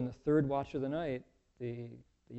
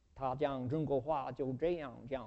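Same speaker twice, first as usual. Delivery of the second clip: Chinese spoken with a Texas drawl; 4 dB quieter than usual. Imitating how a man probably spoke, in Chinese with a Texas drawl. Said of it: "probably spoke with Chinese with a drawl like this".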